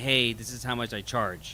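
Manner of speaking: ordinary talk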